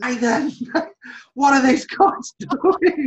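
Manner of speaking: put-on shrill, high, loud, fed-up, unimpressed shouting. Recalling hearing him yell through the control room door, retelling a yell. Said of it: "and he's yelling".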